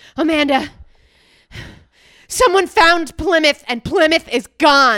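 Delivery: alarmed, very loud panic. Retelling a friend's message on an answering machine: imitating a panicked voice. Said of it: "she panicked in her voice".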